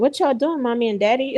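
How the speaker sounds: put-on child voice, scolding. Imagining a couple's kid later seeing their viral video, imitating the little kid. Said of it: "she's gonna be like".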